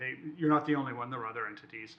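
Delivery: ordinary talk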